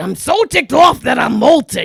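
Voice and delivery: high, swooping voice stretched out long. Showing the only voice known from Aladdin: Gilbert Gottfried voice. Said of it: "that's the only Gilbert Gottfried I got from Aladdin".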